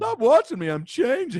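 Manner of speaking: very high put-on effeminate voice. Retelling his joke from a Zoom call with a principal, in an effeminate voice. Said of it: "Maybe it was the effeminate voice".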